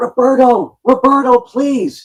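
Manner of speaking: shrill, very high-pitched, loud scream. Retelling begging for an autograph at the front of the line: imitating a scream. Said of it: "and I screamed".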